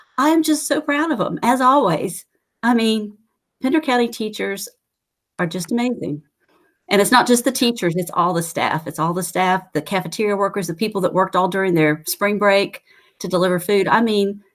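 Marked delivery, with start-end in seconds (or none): 0.2-6.3 slightly teary, getting choked up. Speaker, praising local teachers and staff, gets a little teary. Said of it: "I'm getting a little teary here".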